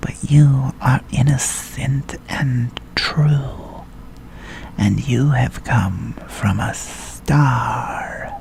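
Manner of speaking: eerie, spooky snake character voice. Narrator reading a story, voicing the snake speaking to the prince; spooky snake voice. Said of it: "said the snake. / But why do you always speak in spooky?".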